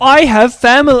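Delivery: very loud, high-pitched, clumsy English accent. Trying out an english accent on a short line: attempted english accent. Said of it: "I'm trying to do an English accent".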